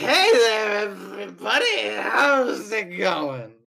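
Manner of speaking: put-on loud drunk man voice. Voicing a drunk man greeting everyone while boarding a boat: acting drunk. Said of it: "He is clearly drunk".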